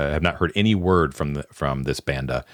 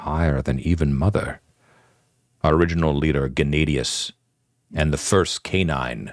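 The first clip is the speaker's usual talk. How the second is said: voice brought down a little. A leader looks around at his men and speaks, voice lowered a little. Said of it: "lowers his voice a little bit".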